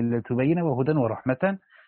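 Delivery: plain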